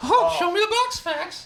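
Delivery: very high squeaky voice. Recalling holding things up for the other speaker, in a Mickey Mouse voice. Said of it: "doing a Mickey Mouse voice".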